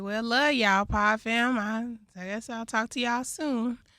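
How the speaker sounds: sounding sad. Signing off the podcast to listeners, sounding sad. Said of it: "Why you sound so sad?".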